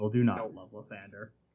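very low, soft storybook narrator voice. Player cutting in on another player's claim during the game, narrator voice. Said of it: "Narrator's voice".

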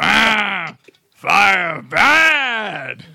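very loud, high, bellowing monster voice, "bad" drawn out. Doing a Frankenstein impression from a comedy sketch: Frankenstein voice. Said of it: "You even do a better Frank".

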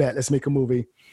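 ordinary talk, nothing marked

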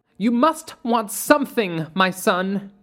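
high voice, exclaiming and calling out. Mother Midnight to Caleb as he takes his seat in class: exclaimed. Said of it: "Mother Midnight exclaimed".

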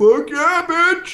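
put-on very high, loud, rowdy drunken yell. Retelling a drunk answer to a live stream question: imitating his own drunk shout. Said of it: "you hear my drunk ass".

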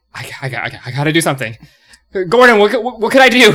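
frantic, very loud stammering. Speaking as a character on the floor after a fight, freaking out. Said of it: "still freaking out".

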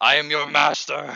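loud, mock rough, commanding villain yell. Retelling a movie scene where Shredder yells at the creatures: imitating Shredder yelling. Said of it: "yells at them".

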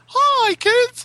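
very high cartoon mouse character voice. Mocking a disliked cartoon character's greeting: Mickey Mouse voice. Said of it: "that fucking voice".

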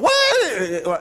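put-on mild scolding call, stretched out. Retelling how a mother scolded her sons: imitating mom raising her voice. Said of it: "she'd be raising her voice".

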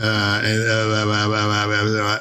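low, slow, put-on stammering English voice. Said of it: "to do Hugh Grant".

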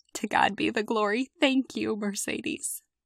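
trembling, quivering, choked-up voice on the edge of tears. Speaker thanks Mercedes after her performance, with a quivering voice. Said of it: "I have a quivering voice and tears in my eyes".

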